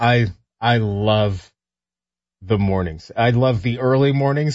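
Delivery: dripping, heavy sarcasm, slow and drawn out. In a chat about sleeping habits, the speaker is being sarcastic. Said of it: "I'm being incredibly sarcastic".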